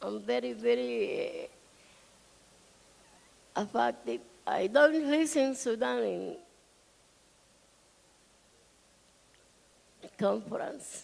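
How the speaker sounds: speaking while crying, tearful. A conference speaker on Sudan, very affected, speaking while crying. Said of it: "I'm crying because".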